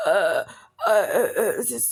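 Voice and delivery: very slow, halting, stammering, fake sick voice. Mocking how Gabby would go online: imitating Gabby's sick voice. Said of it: "in her sick voice".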